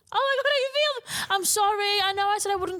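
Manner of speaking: very high voice, on the verge of tears. Saying goodbye at the end of the episode, on the verge of tears. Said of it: "I can already feel the tears".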